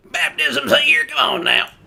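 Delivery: very high, rough, creaky, swooping vendor holler, painful-sounding. Imagining how a preacher sounds: John the Baptist as a lemonade seller. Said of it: "that's what John the Baptist sounds like".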